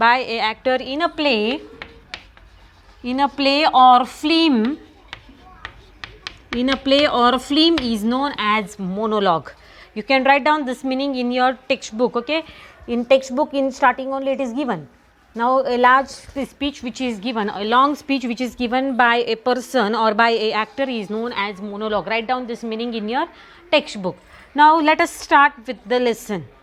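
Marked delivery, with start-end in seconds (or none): 0.0-9.5 slow, drawn-out dictation, phrase by phrase. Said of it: "So I am writing meaning of that word".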